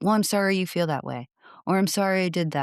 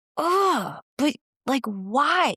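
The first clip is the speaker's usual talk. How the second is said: put-on very high, very slow, frustrated sigh; 9 semitones higher than usual. Retelling reacting to a child's apology after a frustrating morning: imitating frustrated reaction. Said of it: "so frustrated at your kid".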